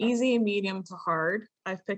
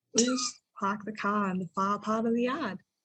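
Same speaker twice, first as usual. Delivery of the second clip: put-on Boston accent. Showing how dropping the R's makes you sound Bostonian, in a Boston accent. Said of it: "You drop all of the R's, and suddenly you're from Boston".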